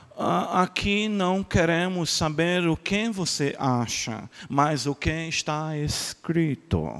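soft, put-on American accent on Portuguese. Retelling what an american pastor said to the speaker, imitating an american accent. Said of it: "falou assim com o sotaque dele".

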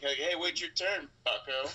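punchy attitude, landing hard on last word "bucko". Showing how to deliver bucko with a little stank on the end. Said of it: "if you add a little stank on it towards the end".

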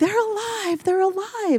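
play-acted, very high, excited, joyful child's shout. Recalling a boy running out as the garage door opened: retelling a child's yell. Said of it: "And he's yelling".

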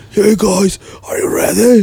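hoarse, blown-out, wrecked, high-pitched voice. Retelling greeting the crowd after losing the voice: imitating own hoarse voice. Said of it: "my voice is so fucked up".

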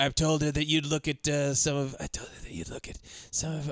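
hushed, soft, barely voiced, under-the-breath whisper. Retelling a film scene at a bar: Mickey Rourke impression, whispering.

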